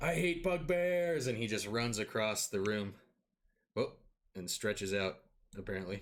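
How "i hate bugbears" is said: all-out, high-pitched screaming yell. Narrating a character grabbing his greatsword and charging, screaming. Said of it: "starts screaming".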